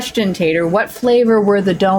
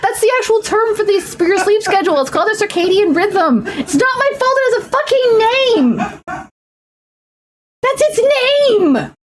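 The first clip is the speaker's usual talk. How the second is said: very high-pitched, shouting, ranting yell; 13 semitones higher than usual. Arguing with another speaker on stream, the speaker is yelling. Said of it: "Sorry, I'm yelling".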